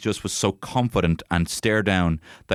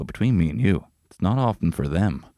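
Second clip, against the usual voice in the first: put-on confiding comedian voice. Retelling a comedian's joke, imitating Norm Macdonald leaning in like a secret. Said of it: "but then he leans in".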